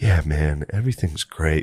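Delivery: dead, unbothered delivery with zero feeling. Recalling hallucinating while Butterly would talk: imitating Butterly's monotone. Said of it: "like this real monotone thing".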